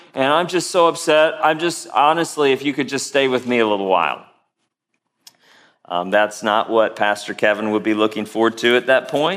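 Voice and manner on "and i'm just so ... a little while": plain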